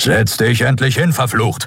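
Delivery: snorting, high-pitched, snorted delivery. A narrator reads Keru speaking to Endriel, snorting. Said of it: "schnaubte Keru".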